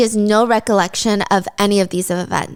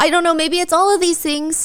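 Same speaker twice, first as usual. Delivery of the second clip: high, frantic, confused rambling. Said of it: "she's so frantic, she's so confused".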